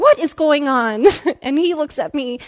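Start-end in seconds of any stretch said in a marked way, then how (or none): 0.0-1.1 fed-up, exasperated, at wit's end tone. Stopping the line and turning to the man behind, retelling an exasperated question. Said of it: "I'm just exasperated at this point".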